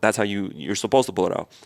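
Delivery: ordinary talk, nothing marked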